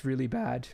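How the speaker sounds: very slow, voice breaking mid-line. A gamer sums up a servant character in a game, voice cracking. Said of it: "It's so bad it made my voice crack".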